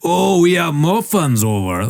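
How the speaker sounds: put-on thick Scottish accent. Retelling a bakery worker's answer to a customer, thick Scottish accent. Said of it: "he had this big Scottish".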